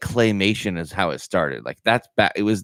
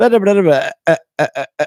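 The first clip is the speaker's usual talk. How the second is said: bad glitchy stutter, very high, like frozen audio; 10 semitones higher, 6 dB louder than usual. Describing an old TV ad to the other speaker, stuttering Max Headroom impression. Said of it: "I'm doing a terrible impression of it".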